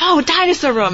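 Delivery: put-on high, loud, excited, thrilled kid's shouting.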